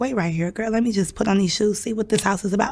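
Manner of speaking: plain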